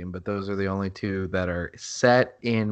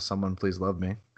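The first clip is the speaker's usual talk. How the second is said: mock whisper, quieter; 5 dB quieter than usual. Describing what they whisper while doing wrestling moves; retelling a whisper. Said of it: "I just whisper".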